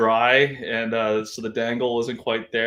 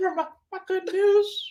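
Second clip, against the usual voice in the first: very high cartoon old-man voice, whistling on words. Imitating the old guy from Family Guy, whistling on words: imitating the old Family Guy guy. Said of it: "that's the old guy that's like".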